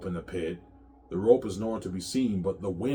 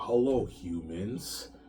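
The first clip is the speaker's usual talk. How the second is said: mocking, taunting tone; 3 dB quieter than usual. Acting out a character stepping from his throne to address humans: mocking greeting. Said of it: "He's mocking them".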